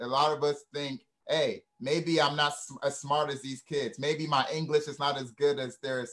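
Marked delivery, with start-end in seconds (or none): none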